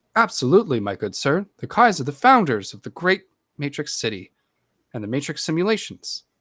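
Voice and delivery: loud, swooping voice assistant voice. Imagining asking about family history and answering in a Siri voice. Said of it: "it sounds like Siri".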